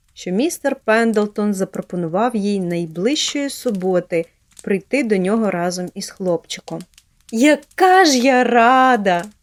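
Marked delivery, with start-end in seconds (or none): 7.4-9.3 loud, very slow, wholehearted, heartfelt exclamation. Narrating a girl taking leave of a gentleman, exclaiming wholeheartedly. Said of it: "від усього серця вигукнула Поліанна".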